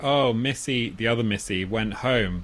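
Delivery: normal talking voice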